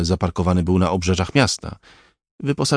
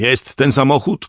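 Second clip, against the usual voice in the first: calling out, pitched high; 6 semitones higher than usual. Amid police sirens, the composer calls out to a man, shouting. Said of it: "krzyknął kompozytor".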